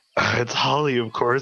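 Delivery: very quiet, soft whisper. Answering who is there in character: whispering very quietly. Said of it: "and I'm whispering real quiet".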